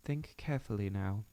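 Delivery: ordinary delivery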